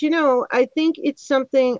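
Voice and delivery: ordinary talk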